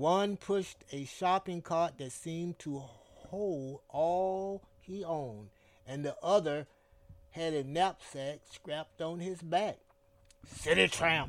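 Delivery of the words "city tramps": loud, sneering, contemptuous and disdainful delivery. Son Bolo as two homeless men near on the sidewalk; sneering. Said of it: "sneered Son Bolo".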